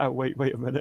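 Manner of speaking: plain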